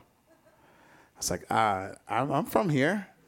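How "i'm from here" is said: put-on nervous voice. Speaker retells being surrounded at nineteen and asked where he's from: imitating own nervous voice. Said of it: "how you can hear the nervousness in my voice".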